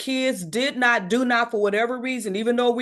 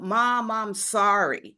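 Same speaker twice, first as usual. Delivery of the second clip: mock tearful, crying voice; 2 semitones lower than usual. Retelling her son's phone call, he could barely speak: imitating someone crying. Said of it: "he could barely get out".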